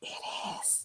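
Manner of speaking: hushed, breathy, very quiet whisper. Retelling a man's reply at a steakhouse in Houston, whispered. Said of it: "he whispers".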